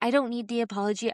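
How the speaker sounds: acted-out frustrated, angry rant. Retelling what was said to a husband who rolled his eyes: imitating own frustrated rant. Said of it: "I get frustrated".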